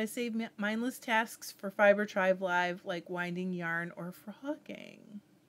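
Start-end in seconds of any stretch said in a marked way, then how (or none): none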